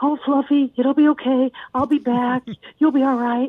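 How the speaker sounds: anxious, fretful, fussing soothing voice. Showing how not to talk to a dog when leaving, in a mock-worried voice. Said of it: "no worried voices like".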